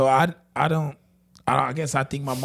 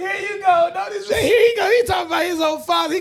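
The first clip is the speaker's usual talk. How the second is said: playful voice, lifted higher in pitch; 4 dB louder than usual. Teasing a friend about how he talks: imitating Troy. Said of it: "He's like".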